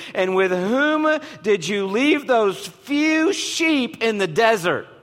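slow, high-pitched, mocking, belittling tone.

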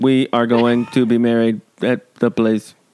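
put-on cyborg robot voice. Recounting a story, show how a character speaks in Lowell's cyborg robot voice. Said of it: "Lowell speaks like a cyborg robot".

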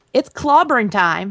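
ordinary delivery

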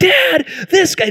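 very high-pitched, furious, angry scolding tone. Retelling a daughter ripping into her little brother: imitating angry scolding. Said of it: "just ripping her little brother".

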